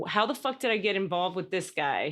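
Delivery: ordinary delivery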